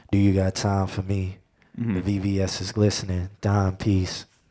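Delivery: seductive voice. Close to the mic, showing how to talk in a seductive voice. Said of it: "talking in the voice of like seduction".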